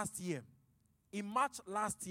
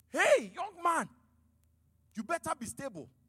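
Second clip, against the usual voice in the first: play-acted raised, pitched-up shout; 8 semitones higher, 6 dB louder than usual. Retelling shouting at a man who shouted at their wife, retelling their own shout. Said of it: "I shouted from the back".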